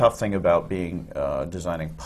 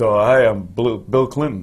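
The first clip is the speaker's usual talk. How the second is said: loud, very slow, drawn-out Brooklyn drawl; 4 semitones higher, 8 dB louder than usual. Giving an example of an impersonation nobody would buy, do Bill Clinton with a Brooklyn accent. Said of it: "spoke with a Brooklyn accent and said".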